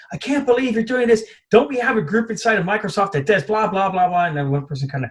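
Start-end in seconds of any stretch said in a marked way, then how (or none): 0.1-4.2 put-on exasperated, angry yelling, pitched up. Retelling how Bill Gates yelled at people after an exploitation: imitating Bill Gates yelling. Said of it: "yelling at people".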